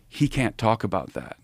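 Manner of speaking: hushed half-whisper, barely any voice. Retelling what the commander's wife said beside him: imitating a half-whisper. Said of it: "and his wife whispers".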